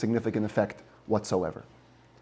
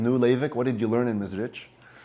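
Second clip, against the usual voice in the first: put-on sarcastic tone. Retelling a father-in-law's question to his son-in-law: retelling a sarcastic question. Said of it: "kind of sarcastically says".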